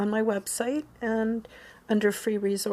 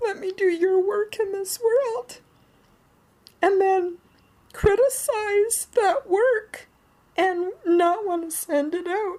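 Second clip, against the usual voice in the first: very high, tearful crying voice, breaking with tears; 10 semitones higher, 4 dB louder than usual. Repeating what their higher self told them, the speaker is crying again: crying while speaking. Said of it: "I know I'm crying again".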